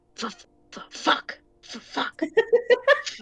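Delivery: very slow, high, drawn-out mutter under the breath. Narrating a character walking ahead, muttered under her breath. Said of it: "And under her breath".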